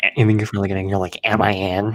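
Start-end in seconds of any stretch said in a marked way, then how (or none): 1.2-2.0 bad, teasing, mocking copy of a voice. Retelling what the other speaker said once in: imitating a friend's voice. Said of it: "Do I really sound like".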